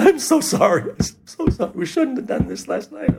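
put-on crying voice. Speaker recounts apologizing to someone, retelling a crying apology. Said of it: "I started to cry".

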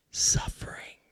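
breathy, whispered suffering tone. Talking about a word in the New Testament: whispered 'suffering'. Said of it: "I'll whisper it".

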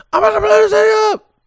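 very high shouted outburst. Acting out how a man said it, retelling a yell. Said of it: "He just yelled it".

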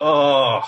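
audible, loud groan of exasperation. Showing his reaction to hack jokes at comedy shows: imitating a groan. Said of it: "I just wanna groan".

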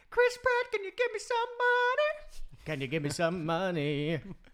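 all-out shout, very high, very loud, shrill, swooping. Telling the other speaker how they shouted out the bathroom window: retelling a full-voice shout. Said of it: "like at the top of my voice".

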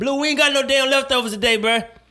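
play-acted very high, hollered yell. Retelling yelling at a neighborhood man asking for leftovers at the door: retelling own shout. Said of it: "And I just yelled".

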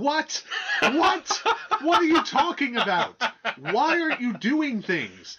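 play-acted, very high, swooping, frustrated angry shouting. Retelling watching a Transformers movie: imitating own angry shouting at the television. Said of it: "stuttering in anger and shouting at my television".

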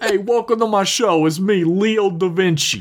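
silly, high Brooklyn accent. Pitching a comedy character who hosts educational videos: Leo da Vinci Brooklyn accent. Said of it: "this like Brooklyn accent stupid character".

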